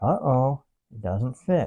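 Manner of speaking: sarcastic feigned surprise and dismay, swooping pitch. Fitting a gun into a tight holster: sarcastic fake surprise. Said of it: "sarcasm in my voice".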